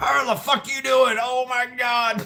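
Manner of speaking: put-on very high-pitched great-grandfather style old man voice. Retelling how a great grandfather talked: imitating his great grandfather. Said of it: "he talked like that".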